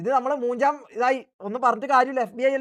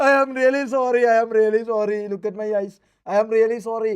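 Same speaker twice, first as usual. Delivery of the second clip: fake tearful mock crying, louder; 4 dB louder than usual. Speaker begs for understanding, pretending to have cried: fake tearful apology. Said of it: "I already cried".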